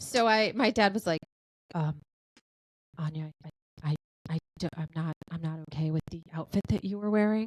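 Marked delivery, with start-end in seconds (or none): 3.0-7.5 put-on soft-spoken voice, faster. Speaker retells what her dad said about her outfit, imitating a soft-spoken dad. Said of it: "he's very soft spoken".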